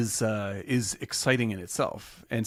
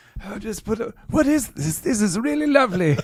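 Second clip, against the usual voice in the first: very high, shrill put-on old-man voice, weird accent; 11 semitones higher, 7 dB louder than usual. Imitating the other speaker as an old man listening to music: put-on older-self voice, weird accent. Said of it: "I love when we do impressions of our older selves".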